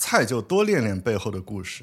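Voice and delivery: ordinary talk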